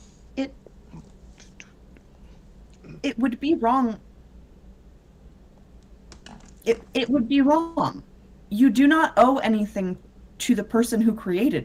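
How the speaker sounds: acted-out whisper, in character. Acting out how she whispers to him in the story: acted-out whisper. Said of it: "So she whispers to him".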